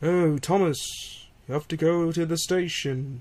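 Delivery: mock sleepy, barely awake, slow storyteller narration. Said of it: "he sounds like this half the time".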